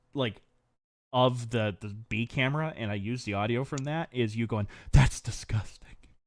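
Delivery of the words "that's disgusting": soft, whispered under the breath, quiet and low. Quoting what the listener whispered into the camera microphone: retelling a whisper. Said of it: "all you whisper into the microphone".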